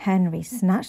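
ordinary delivery

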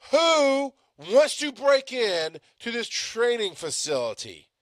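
very high, very slow, drawn-out yell. Retelling how they yelled a question to him while driving, retelling a yell. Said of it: "And I yelled".

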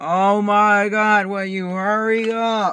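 very high, very loud, drawn-out shriek. Vlogger recording for followers yells at someone to hurry up: yelling. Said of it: "Sorry for the yelling".

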